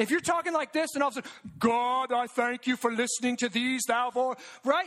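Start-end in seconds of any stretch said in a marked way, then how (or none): 1.6-4.4 put-on, fake pious churchy performance tone. Speaking to a group about fake praying, demonstrating a mock pious prayer voice. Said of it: "If your voice changes when you start praying".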